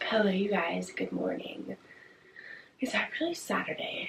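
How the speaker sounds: relaxed, casual voice at normal level. Morning vlog greeting while her boyfriend is still sleeping, talking quietly. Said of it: "sorry if I'm talking quiet".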